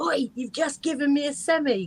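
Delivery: high, loud hollered call-out. Retelling a chat-up line a security guard called from his van: imitating someone shouting. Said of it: "he shouted out".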